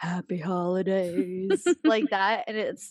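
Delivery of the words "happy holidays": cheery, deep, put-on voice dropped low. Imitating how the mother-in-law always says the holiday greeting: mock-cheerful deep voice. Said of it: "She does like the deep, like cheerful".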